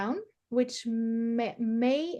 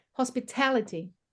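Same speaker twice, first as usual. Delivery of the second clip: hospitality with stress on third syllable ta. Correcting a learner's attempt at a word: stress on third syllable of hospitality. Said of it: "it's on the A".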